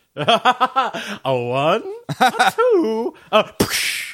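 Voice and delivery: theatrical, swooping vampire voice. Counting off to get something fixed, in a Count-esque voice. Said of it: "I was also doing a count-esque voice".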